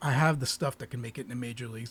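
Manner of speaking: ordinary delivery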